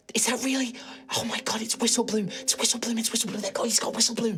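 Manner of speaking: excited whispering, high and rushed. Voicing the group as the herbs are brought out, excited whispering. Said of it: "they're like whispering to each other".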